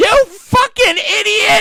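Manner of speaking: piercing, shrill, very high, very loud scream. Retelling a news story, quoting an older woman: imitating a woman yelling. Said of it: "she started yelling at him".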